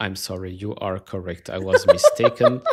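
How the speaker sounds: loud, swooping AI assistant voice. Mocking the way a man just spoke, imitating an AI response. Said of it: "spoke like an A I response".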